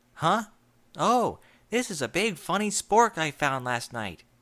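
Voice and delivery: cheerful, bright, sunny delivery. A narrator reads a pegasus answering her friend's puzzled question, cheerful. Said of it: "[name]'s wonky eyes opened sleepily to observe an irate sky-blue Pegasus mare hovering above her. / [name]'s wonky eyes opened sleepily to observe an irate sky-blue Pegasus mare hovering above her. /".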